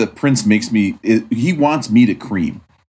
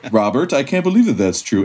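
ordinary talk, nothing marked

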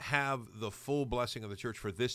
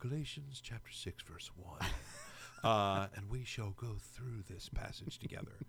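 creepy, hushed, breathy, whispered preacher voice; 7 dB quieter than usual. A podcaster demonstrates reading a Bible passage, pretend podcast preacher voice. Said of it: "It's my pretend podcast preacher voice".

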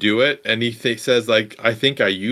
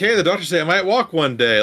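upbeat, cheerful voice, pitched higher; 6 semitones higher than usual. Retelling a film scene where a wounded student greets a mother: imitating an upbeat greeting. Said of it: "actually upbeat and kinda happy to see her".

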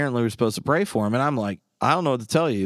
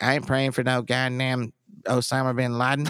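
put-on blunt, dead-on rural man's voice. Retelling what one of the guys in the group said, imitating his voice. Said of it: "in that exact voice".

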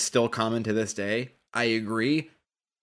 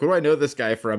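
ordinary delivery

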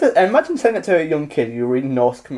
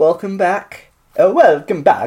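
put-on Swedish accent, higher and louder; 3 semitones higher, 4 dB louder than usual. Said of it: "doing a Swedish accent".

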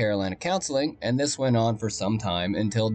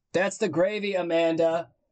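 mock raised, loud, high-pitched, carrying voice; 6 semitones higher than usual. Retelling what her friend's mother said in passing, imitating a loud remark. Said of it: "very loudly says".

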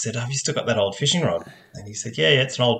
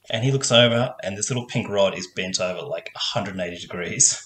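usual speaking voice

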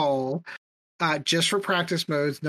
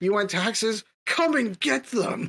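defiant, pitched-up warrior voice, hurled out forcefully; 5 semitones higher than usual. Answering a demand for taxes from someone who could easily kill you, do a Leonidas impression. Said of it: "I did my best Leonidas impression".

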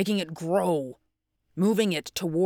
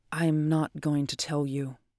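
soft, quiet voice; 2 semitones lower than usual. Narrator reading a woman's reply to a man asking where the papers are, said softly. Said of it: "Kelly said softly".

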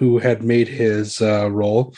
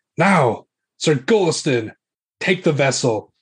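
furious, angry, forceful delivery; 4 semitones higher than usual. Narrating the scene, the countess stands and gives her order, screaming angrily. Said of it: "she's like screaming it at you".

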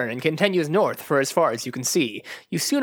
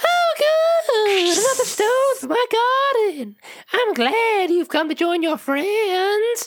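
put-on old man voice at very high pitch. Narrator voices a giggling old man jumping out from behind statues; high-pitched old man voice. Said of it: "In a high-pitched voice".

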